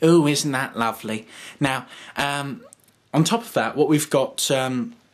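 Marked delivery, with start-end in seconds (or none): 0.0-1.3 heavy camp put-on voice. Building up a voice by adding a camp aspect: camp Moss voice. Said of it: "you've got a camp sort of Moss voice going on right right now".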